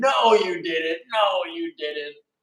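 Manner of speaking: drawn-out, protesting, put-on screaming woman's cry. Retelling how a wife snatched her husband's phone, imitating a woman screaming. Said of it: "started screaming".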